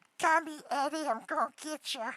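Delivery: silly goblin voice, pitched high. Showing the voice of Eddie, a little goblin from a YouTuber's channel: Eddie goblin voice. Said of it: "But I can do this".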